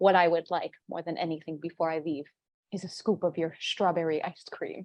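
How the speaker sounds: play-acted, low, creepy, unsettling voice. Retelling a man's reply to a woman offering him a tip, mock-creepy delivery. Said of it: "he says it in such a creepy way".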